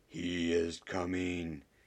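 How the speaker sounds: vast, hollow, cutting voice. Reading a story aloud, voicing an unseen speaker who interrupts everyone: huge, hollow voice. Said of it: "a huge, hollow voice that cut through all conversation like a sword of ice".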